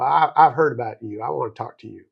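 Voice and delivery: put-on Southern twang accent. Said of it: "I hear this Southern twang".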